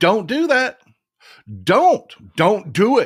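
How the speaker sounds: put-on insistent, urgent screaming, repeating "don't". Retelling a warning against the tax cut: retelling own screaming. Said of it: "But I was screaming".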